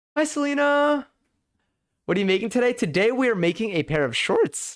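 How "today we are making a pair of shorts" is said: cracking voice, higher pitch. Answering what is being made today: voice cracking. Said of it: "my voice is cracking here".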